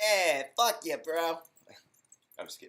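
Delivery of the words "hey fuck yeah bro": put-on Brooklyn accent, loud and drawn-out. Reading Frank's words aloud, the speaker tries them in a Brooklyn accent. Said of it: "a Brooklyn accent".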